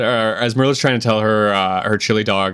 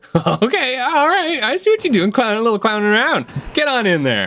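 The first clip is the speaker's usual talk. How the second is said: very high, swooping, tittering and giggling voice; 13 semitones higher than usual. Voicing a shrub that giggles at a player's antics: giggling shrub voice. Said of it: "the shrub kinda starts to giggle a little bit".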